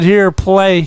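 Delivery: plain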